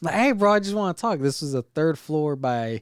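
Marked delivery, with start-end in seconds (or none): 0.1-1.2 put-on, very high screamed call. Retelling a high school hallway confrontation, calling after a guy: retelling screaming down a hallway. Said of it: "I'm screaming from in the hallway".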